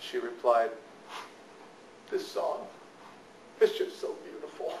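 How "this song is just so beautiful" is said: put-on soft sniffling, much quieter. A parent retells the daughter's reply from the car, imitating soft sniffles. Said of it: "between soft little sniffles".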